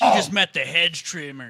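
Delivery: very loud, slow nineties action-hero one-liner delivery. Suggesting a line for tackling a man dressed as a bush: nineties action movie one-liner. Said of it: "say something rad like it's a nineties action movie".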